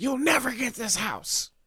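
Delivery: mock yelling, shrill and very high-pitched. Retelling how a lady yelled at a young man buying her house, imitating someone yelling. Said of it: "And she's like Yelling at him Like she's like".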